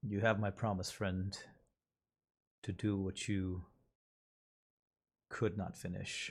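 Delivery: soft words muttered under the breath, barely carrying. Voicing a character bowing to a departing figure: quietly under his breath. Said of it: "says kinda quietly under his breath".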